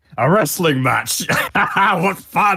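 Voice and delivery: in-character shout. Grappling a stone giant as the character, shouting a challenge: in-character shout. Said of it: "I'm gonna shout out".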